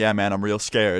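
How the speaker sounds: ordinary delivery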